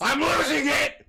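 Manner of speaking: shrill outburst, very high and loud. Complaining about a tangled mic cord: yelling. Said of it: "Would you stop yelling?".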